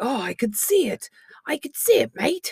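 put-on high-pitched Australian accent. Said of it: "missing our Australian accents".

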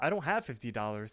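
ordinary delivery

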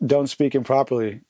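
normal talking voice

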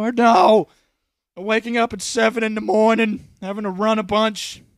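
put-on loud Brooklyn accent. As a World War II vet answering his grandchild, use a Brooklyn accent. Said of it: "That's a Brooklyn accent".

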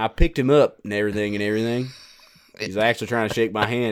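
slow Southern accent, words stretched out. Retelling their own story again after being told to say it with a southern drawl. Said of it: "You got to say with a southern draw".

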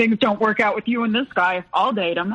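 playful, jokey delivery. Retelling a brother's remark about this guy, quoting brother jokingly.

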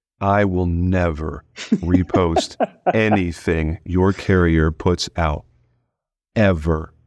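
slow, deliberate, each word drawn out. Retelling a line told to carrier reps, retelling slow, deliberate words. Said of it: "very slowly and deliberately say".

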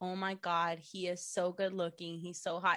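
ordinary talk, nothing marked

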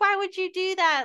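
fearful screaming. Retelling the scare when she was hiding, retelling her own screaming. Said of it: "That's when I go into like screamer mode".

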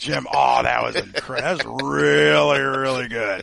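slow, creaky, drawn-out impression.

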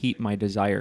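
ordinary talk

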